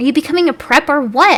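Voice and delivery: high-pitched, furious angry shout. Reading a fan story aloud, a character refusing Draco: shouting angrily. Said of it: "I shouted angrily".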